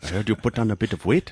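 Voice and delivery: put-on South African accent. Quoting a South African man, South African accent. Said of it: "the South African accent".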